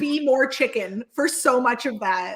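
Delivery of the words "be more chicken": loud, shouted voice. Retelling the producer standing at the challenge: imitating someone shouting. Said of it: "He was shouting at us".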